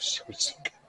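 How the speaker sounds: soft, unvoiced, apologetic whisper.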